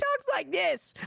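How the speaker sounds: very high, whiny voice. Describing another player's roleplay character, the speaker imitates Ted's high-pitched voice. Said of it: "It's like really high pitched".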